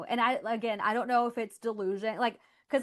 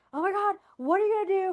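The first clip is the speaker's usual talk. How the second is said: put-on panicked, freaking-out voice, higher; 10 semitones higher, 4 dB louder than usual. Retelling a call with mom after losing a job: imitating mom freaking out. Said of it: "freaking out over it".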